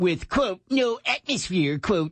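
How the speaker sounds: high, slow, nerdy voice. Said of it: "Now you sound like comic book guy from The Simpsons".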